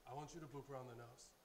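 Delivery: ordinary delivery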